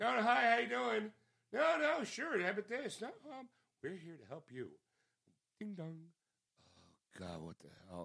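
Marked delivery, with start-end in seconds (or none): 0.0-4.7 high, put-on fake-nice friendly voice. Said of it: "put on that fake front of being nice".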